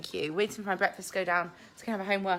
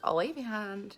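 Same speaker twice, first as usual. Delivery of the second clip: ordinary talk, nothing marked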